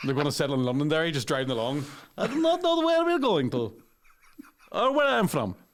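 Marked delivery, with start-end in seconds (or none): 2.2-5.5 very high, swooping fake Ukrainian lilt. Imagining a refugee from Kiev driving lost toward Londonderry, fake Ukrainian accent. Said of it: "Is this voice accurate?".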